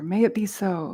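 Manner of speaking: plain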